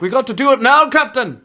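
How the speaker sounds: put-on bright chirping Scottish accent, very high pitched. Describing a scottish woman character in a movie, chirpy scottish voice. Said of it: "chirping up in her Scottish voice".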